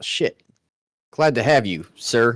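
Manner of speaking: awkward. Voicing a character greeting a Solar, speaking awkwardly.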